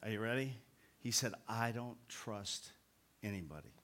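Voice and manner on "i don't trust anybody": mock deadpan, lower, quieter, slower. Retelling a man's immediate reply, imitating a deadpan delivery. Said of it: "Just deadpan".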